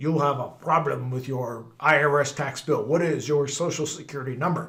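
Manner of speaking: put-on heavy Russian accent, laid on thick. Retelling what a caller said on the phone, heavy Russian accent. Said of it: "This real heavy Russian accented guy goes".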